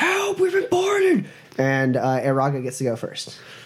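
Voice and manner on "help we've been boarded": high, screamed, desperate cry. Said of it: "he's screaming".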